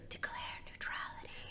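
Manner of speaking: very quiet, hushed whisper. Acting out a portrait whispering advice into a president's ear: whispering as George Washington. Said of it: "he's whispering on our ear".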